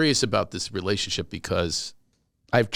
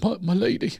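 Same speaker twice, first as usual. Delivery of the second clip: mock tearful, pleading crying voice, higher; 10 semitones higher than usual. Retelling a man in court addressing the judge: imitating someone crying. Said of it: "he's crying, go".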